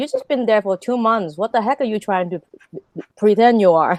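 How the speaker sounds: usual speaking voice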